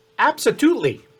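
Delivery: very high, squeaky mouse voice. Narrating a story, the character Gus Gus answers you in a very high-pitched voice. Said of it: "in this very high pitched uh, voice".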